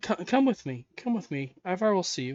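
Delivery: woman's voice, calling out simply. A woman opens the door again to the waiting visitors: voicing the woman at the door. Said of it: "and a rather wispy brunette woman, / and a rather wispy brunette woman, appearing to be in her early 30s, / and a rather wispy brunette woman, / appearing to be in her early 30s".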